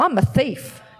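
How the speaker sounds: normal talking voice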